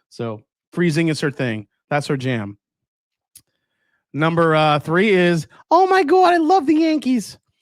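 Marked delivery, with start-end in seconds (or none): 5.7-7.3 very high, loud, gushing motherly voice. Listing the top five things your mom says, imitating his mom's voice. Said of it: "please do your mom's voice".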